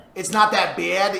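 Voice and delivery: New York style speech. Asked by friends to repeat the phrase, a Staten Island speaker uses a New York accent. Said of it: "Make fun of their accent".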